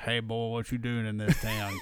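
put-on Southern American accent. Quoting the alien bartender out in space, in a put-on southern accent. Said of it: "The alien bartender has a Southern accent".

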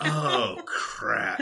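stretched out, deep pitch. Retelling a TV moment where Gordon reacts, Gordon's drawn-out 'oh, crap'. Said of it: "It's so drawn".

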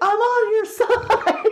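shrill, very high, drawn-out hollered yell. Retelling a movie scene where the hero yells at the agents: imitating someone yelling.

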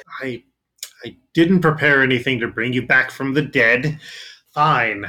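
weary, grudging, fed-up, exasperated tone. Game master voicing a rival wizard who lets the players out: frustrated wizard. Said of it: "Just this very frustrated wizard leading a group of people. / you see a bald, very tired-looking man who points at you, / very tired-looking man who points at you, / The wizard was sent in as a rival".

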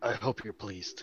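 barely audible, hushed, very quiet whisper. Kneeling by the head of a body in character: whispering. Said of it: "just whisper".

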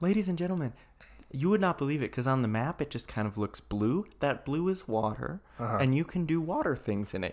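over-explaining, pedantic know-it-all lecturing tone. Mocking the wording of a text being read: mock pedantic voice. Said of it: "Just speak so pedantic to us".

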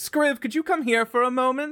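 very high, loud screamed call. Calling a helper up from downstairs, screaming down from upstairs. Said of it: "screams down from the upstairs".

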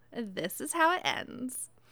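put-on Valley Girl accent. Reading lines aloud on request: Valley Girl Zavala voice. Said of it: "I'm going to read this in my best Zavala voice. Valley Girl Zavala, incoming".

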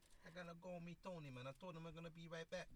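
New York mafia-guy accent. Explaining how New Yorkers talk, demonstrating a New York mafia-guy accent. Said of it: "only time i could talk like this when i want to be like one of these mafia guys".

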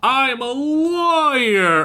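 play-acted, wildly hammed-up boastful tone, very high, swooping. Retelling a character's line: over the top. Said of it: "just really over the top".

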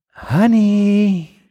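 sweet drawn-out voice. Showing how she says it before correcting him: imitating her nice 'honey'. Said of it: "Sounds like this".

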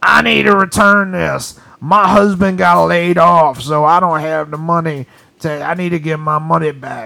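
put-on voice of an old woman smoker. Retelling an older woman trying to return a prepaid card, imitating a smoker's voice. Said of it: "She's got that smoker voice?".

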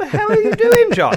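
high, loud, laughing, disbelieving speech.

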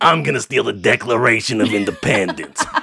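goofy put-on character voice. Asked about stealing the Declaration of Independence, trying it in the Bucky Buchanan voice. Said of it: "in the Bucky Buchanan voice".

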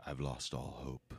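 silky smooth, deep, very low, soft, hushed announcer voice. Showing off a line as if for voiceover work: silky smooth voiceover voice. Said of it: "How silky smooth is that?".

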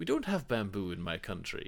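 put-on very posh Iraqi-accented voice. Retelling a screen character's line the way the actor voices it, very posh Iraqi accent. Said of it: "Comes across like a very posh Iraqi".

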